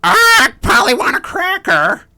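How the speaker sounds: very high, shrill, very loud cartoon parrot voice. A talking bird character shows the cliché others expected, in a stereotypical parrot voice. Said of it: "Did you expect me to go?".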